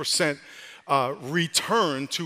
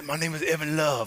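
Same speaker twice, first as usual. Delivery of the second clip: very raspy, rough voice; 4 dB quieter than usual. Retelling asking a man his name, raspy Evan Love impression. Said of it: "He had this real raspy voice".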